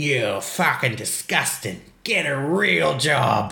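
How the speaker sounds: put-on thickest, very broad, slow Australian accent. Retelling a man's words after he throws a water jug, broadest Australian accent. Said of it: "says in the most broadest Australian accent ever".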